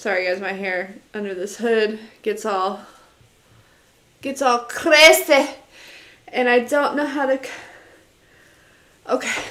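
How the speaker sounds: winded, out of breath. Talking to viewers, out of breath. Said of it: "Why do I sound out of breath?".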